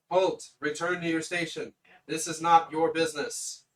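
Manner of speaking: loud, disembodied automated machine voice. Voicing a disembodied voice from a machine ordering intruders to halt: disembodied machine voice. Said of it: "this voice that comes out just says".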